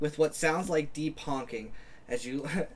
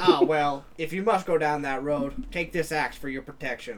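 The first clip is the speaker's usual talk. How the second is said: plain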